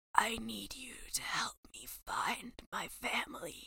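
hushed, whispered delivery in dramatic movie-actor style. Mocking a film character's line: imitating Credence whispering. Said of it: "all of the actors are whispering all the time".

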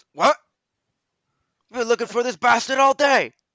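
very high, very loud, shrill surprised startled cry. Narrating the scene, the speaker voices a guard who turns to you: surprised guard. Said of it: "turns to you surprised and goes".

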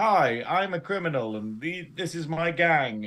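slow, unconvincing, transparent bad bluffing tone. Retelling a scene, imitating a character badly bluffing. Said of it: "she's like".

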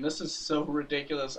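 imitated talking while laughing. Retelling what she said during the droid factory scene, retelling a laughing line. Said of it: "she's just laughing and saying".

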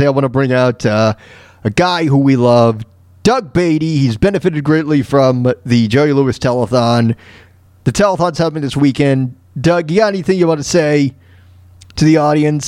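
ordinary delivery

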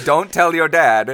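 mock loud, high-pitched delivery.

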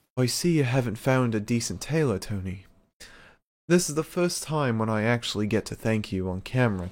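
put-on grand, royal-sounding, regal delivery. The speaker tries doing a voice: a put-on regal voice. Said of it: "Let me try and do a Regal voice".

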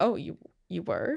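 mock, taken-aback, surprised police officer voice. Retelling how the arresting officers reacted: imitating taken-aback officers. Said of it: "taken aback".

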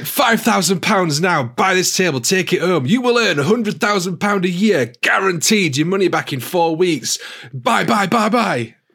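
high-pitched, pushy hard-sell salesman voice. Recounting how a seller pressed them to buy a table, imitating a pushy salesman. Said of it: "This guy was like".

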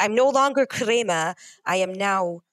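plain

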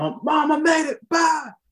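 mock very high, stretched-out, drawn-out holler. Retelling calling home on arrival at basic training: retelling own past yell. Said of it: "I'm yelling".

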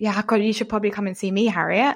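half-joking, jokey throwaway delivery. Retelling what people say on hearing about the work: imitating a jokey tone. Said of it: "they say it in a jokey way".

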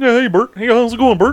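very high, poorly done puppet voice. Showing the voices done while driving around: bad Ernie voice. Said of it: "so I can get into the voice".

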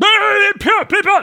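put-on ranting villain voice. Retelling the moment they storm the castle, doing Valthry ranting and raving. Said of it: "He's ranting and raving".

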